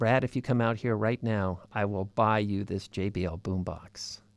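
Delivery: muttered under breath. Retelling a woman's offer to him, quoting her under her breath. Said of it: "under her breath".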